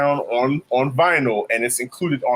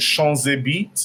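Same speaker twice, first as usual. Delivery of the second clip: put-on heavy French accent; 2 semitones higher than usual. Describing a record's B-side to a co-host, very French accent like Fab Five Betty. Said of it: "She says it in a very French accent".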